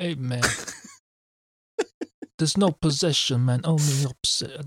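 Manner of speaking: soft, wonky mobster-style voice. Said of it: "my mafia voice has gone a bit wonky".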